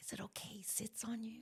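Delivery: soft, hushed whisper. Retelling a question once asked across a circle: retelling a whisper. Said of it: "I remember whispering, like".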